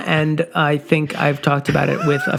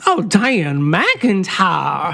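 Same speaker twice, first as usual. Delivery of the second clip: put-on Southern drawl; 2 semitones higher than usual. Reading out supporter names as a joke: southern accent. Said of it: "we should have done these all in Southern accents".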